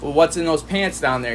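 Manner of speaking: usual speaking voice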